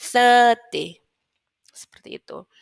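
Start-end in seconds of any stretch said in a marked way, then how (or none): 0.0-1.0 thirty with first syllable thir stressed. Teaching English word stress, stress on thir in thirty. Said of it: "berarti se yang ditekan".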